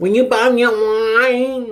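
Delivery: grating, very high, slow, whiny, stretched voice. Telling a story, quoting what her friend said: imitating friend's annoying voice. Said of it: "she had a real annoying voice".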